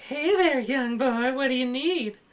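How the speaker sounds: put-on very high-pitched old-timer voice. Retelling what the random old guy said when he walked up: imitating Herbert. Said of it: "the random old guy that walked up and he's like".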